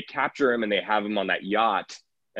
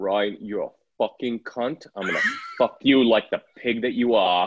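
put-on British accent. Taking turns doing impressions with the others, speaker gives a Billy Butcher impression. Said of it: "do our best Bully Butcher impressions".

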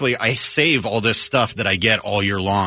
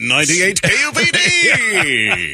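radio announcer delivery, higher and louder; 10 semitones higher, 5 dB louder than usual. Showing how a whole show in announcer style would sound: announcer voice. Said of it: "do a whole show of that".

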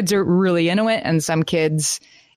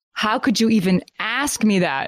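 mock lofty, haughty, affronted indignation; 4 semitones higher than usual. Acting out how they react when asked if they did it, mock haughty outrage. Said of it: "the level of outrage".

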